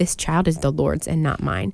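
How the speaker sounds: usual speaking voice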